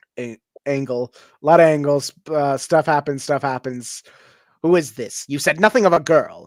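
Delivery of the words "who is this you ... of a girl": basic British bad-guy villain accent. Voicing an evil guy confronting the players: basic British evil guy accent. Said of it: "basic British, like, evil guy".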